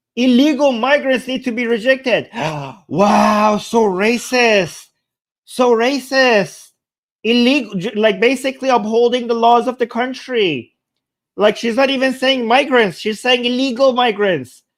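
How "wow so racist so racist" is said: slow, drawn-out sarcastic gasp of mock outrage. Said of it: "I'm being sarcastic".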